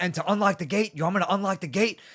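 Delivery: mock woman's yelling, high-pitched and loud. Speaker retells a woman cutting him off on a call, imitating her yelling. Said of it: "she's yelling at me".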